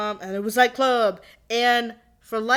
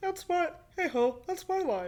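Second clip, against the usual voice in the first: bad put-on frog puppet voice, higher and quieter; 7 semitones higher, 8 dB quieter than usual. Joking about a favorite color: not very good Kermit voice. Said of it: "It's not a very good Kermit".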